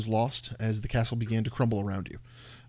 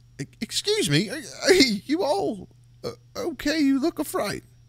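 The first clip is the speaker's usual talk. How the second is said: put-on very high, sing-song, swooping elderly man voice; 3 dB louder than usual. Game master voices a stranger startling the party from behind, elderly man voice. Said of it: "a tall, thin, elderly human man".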